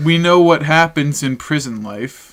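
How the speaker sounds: ordinary talk, nothing marked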